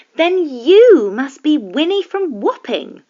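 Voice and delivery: eager, excited witch voice, high and loud. Narrator reading a witch recognising another witch, exclaiming excitedly. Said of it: "the witch exclaimed excitedly".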